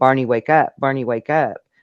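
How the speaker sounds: acted-out frantic, panicked, pleading urgency. Retelling a woman trying to wake Barney: imitating panicked pleading. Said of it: "she was panicked".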